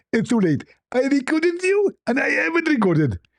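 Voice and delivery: mock voice, pitched way up, high and gloating.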